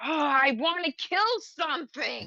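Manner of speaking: high-pitched, seething fury barely held in. Describing a seething character, then speaking as her, seething anger. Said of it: "And she's just so angry".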